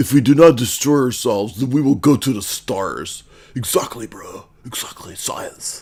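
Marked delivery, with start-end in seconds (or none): 0.0-3.2 dopey, dumb, nerdy character voice. Reading out online comments to mock them: dumb nerd voice. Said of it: "dumb nerd voice".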